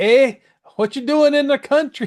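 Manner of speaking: very high, loud, terrible fake Canadian accent. Wondering about meeting Mounties, a speaker imagines one questioning them, in a terrible Canadian accent. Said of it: "that's a terrible Canadian accent".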